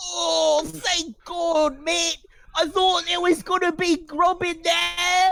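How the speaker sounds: breathless, gasping rat squeak, very high pitched. A rat falls out at the player's feet and speaks; gasping rat voice. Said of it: "He immediately begins gasping for air. And he says".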